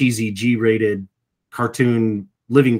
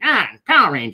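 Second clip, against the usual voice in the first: higher, sneering, vulture-like villain voice. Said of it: "a Vulture type character".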